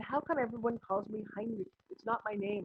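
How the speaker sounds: ordinary talk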